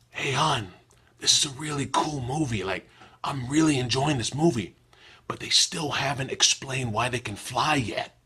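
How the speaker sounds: mock whispering. Speaker retells a man whispering to a woman during a movie, retelling a whisper. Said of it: "he whispers".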